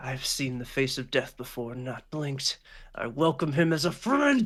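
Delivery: murmured, muttered under his breath. A game master voices a defeated man whose demeanor changes: murmuring to himself. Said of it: "he kind of like murmurs to himself".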